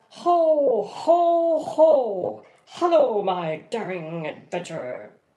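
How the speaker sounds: grand theatrical booming stage-actor voice, very slow, loud. Showing how Santa Claus should sound: Santa Claus voice like Patrick Stewart. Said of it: "Sort of like Patrick Stewart".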